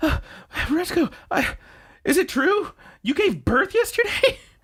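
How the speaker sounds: play-acted distraught, very high-pitched, stumbling. Retelling how Haida runs over to Retsuko: imitating distraught Haida. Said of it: "he's so distraught".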